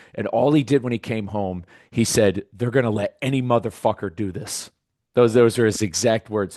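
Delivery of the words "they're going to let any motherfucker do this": angry, ranting voice. Retelling what he said on coming home: imitating someone angry. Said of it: "I'd never seen him so mad".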